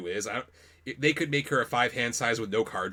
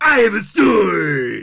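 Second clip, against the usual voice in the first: bad booming voice, slow and swooping, stretched "sword"; 8 semitones higher, 13 dB louder than usual. Retelling a tournament spent talking in character: bad Kuwabara voice. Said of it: "talking in my bad Kuwabara voice".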